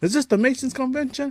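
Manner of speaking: very high, loud yelled words. Retelling a movie scene where a character yells: imitating a character yelling. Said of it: "when he starts yelling out the".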